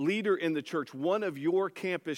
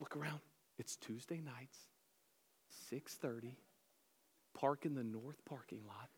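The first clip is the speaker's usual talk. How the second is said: very quiet, hushed, furtive, secretive voice; 7 dB quieter than usual. Acting out someone pulling you aside by the shoulder, imitating a hushed voice. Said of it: "let's lower our voices".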